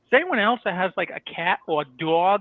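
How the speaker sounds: put-on slow, heavy, hard New England accent laid on thick. Imitating a friend's Snapchat message sent while drinking, in a heavy New England accent. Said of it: "you just hard accented that".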